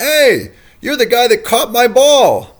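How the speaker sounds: booming, high-pitched shout. Retelling a clubhouse meeting, Ortiz calling across the room, Ortiz's booming voice. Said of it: "I hear this booming voice from across the room going".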